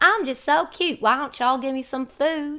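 Southern Tennessee-accented dog voice. The speaker voices their dog, who is from Tennessee, in Myrtle's Tennessee-accent voice. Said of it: "when I give her a voice, that voice is like this".

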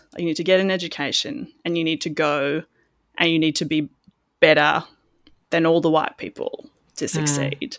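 ordinary delivery

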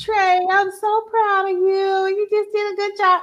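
sweet, kindly tone. Trey imagines the voice of a woman he misses, imitating a nice, sweet voice. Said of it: "that nice, sweet voice like that".

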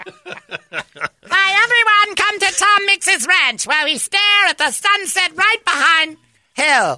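squeaky, thin silent-film star voice. Imitating someone inviting everyone to a ranch: squeaky Tom Mix voice. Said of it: "with that squeaky voice".

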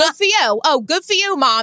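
put-on bratty, mouthy kid voice with New York accent. Retelling what a kid said after his candy was stolen: imitating a typical Long Island kid. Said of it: "It was a typical Long Island kid".

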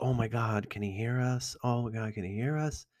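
fretful, worried, self-conscious tone. Retelling what a self-conscious girl kept asking: imitating self-conscious worry. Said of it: "self-conscious, like".

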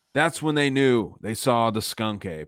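utterly solemn, dead-serious documentary narrator voice, played straight. Recalling watching Unsolved Mysteries as a kid, the speaker imitates Robert Stack's dead-serious voice. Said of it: "in his dead ass serious voice".

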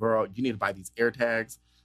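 ordinary delivery

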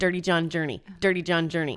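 rapid, fast delivery. Saying a tongue twister fast after being challenged: said fast. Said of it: "Say that fast ten times".

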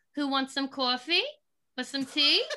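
put-on heavy New Jersey accent with a raspy smoker voice. Describing a baby video of themself at a toy kitchen, in a thick jersey accent. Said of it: "pretty thick Jersey accent".

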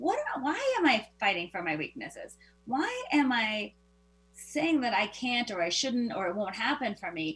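ordinary talk

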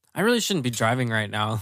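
ordinary talk

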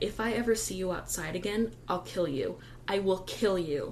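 normal talking voice

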